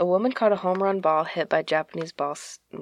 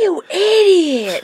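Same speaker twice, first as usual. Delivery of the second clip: put-on screaming, higher and louder; 14 semitones higher, 10 dB louder than usual. Retelling what a heckler at a baseball game did: imitating a screaming heckler. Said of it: "he's screaming".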